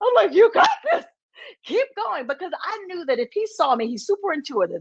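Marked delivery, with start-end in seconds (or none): 0.3-2.3 mock very high, swooping, crying voice. Retelling encouraging a performer after seeing photos of a burgled home: imitating own crying while encouraging. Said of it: "I am crying".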